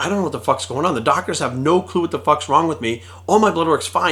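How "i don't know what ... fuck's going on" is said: plain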